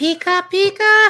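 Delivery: very loud, high, shrill creature cry, belted out. Chatting about favorite starter Pokemon, doing a Pikachu voice. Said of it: "start doing all the Pokemon voices".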